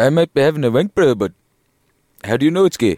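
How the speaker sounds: put-on Johannesburg accent. In a comedy bit, the man behind a door answers, in a Johannesburg accent. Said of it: "your Johannesburg accent".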